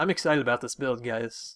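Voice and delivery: ordinary talk, nothing marked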